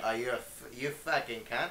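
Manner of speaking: put-on Australian accent, warming up. Showing how he gets into doing a put-on Australian accent. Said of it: "the way I get into to do an Australian accent".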